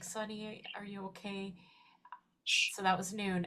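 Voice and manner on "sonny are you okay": put-on crying with a tearful pleading tone. Retelling calling out to a pet who died: retelling own crying. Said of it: "and I'm crying".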